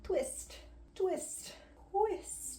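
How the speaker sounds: high squeaky twist sound effect. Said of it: "make the twist noise like that every single time".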